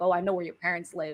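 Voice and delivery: ordinary talk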